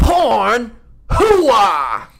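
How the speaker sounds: put-on gruff shouting voice. Saying one given word as a celebrity impression: Al Pacino impression. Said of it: "Are you doing Al Pacino?".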